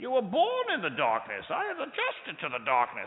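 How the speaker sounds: big, loud, booming, swooping comic-book villain voice. Retelling wearing a breathing mask at night: Bane voice. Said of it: "I feel like Bane from Batman".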